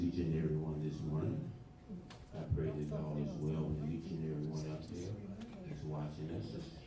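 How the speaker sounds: very quiet, too quiet to hear. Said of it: "Could you speak a little louder".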